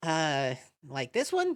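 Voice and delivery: unhurried, slow, drawn-out put-on character voice. Voicing the librarian offering a book: Alphys voice. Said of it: "and is like".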